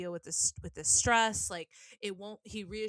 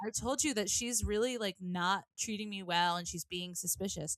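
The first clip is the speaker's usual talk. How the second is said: ordinary talk, nothing marked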